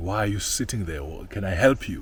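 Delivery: put-on accusing tone. Retelling what a voice said to someone at a home's gate; mimicking an accusing tone. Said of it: "A very accusing voice, a very accusing tone".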